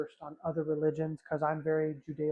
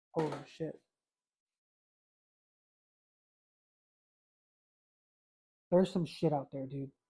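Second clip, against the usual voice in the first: tearful speech, crying while talking. About to tell viewers a frightening story, crying while talking. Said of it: "you guys are literally seeing me cry".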